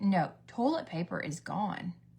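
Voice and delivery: plain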